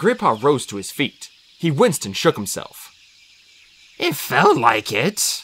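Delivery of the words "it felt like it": very slow, drawn-out grumble. Greypaw answers Firepaw, who attacked him thinking he was an enemy warrior, grumbling. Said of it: "he grumbled".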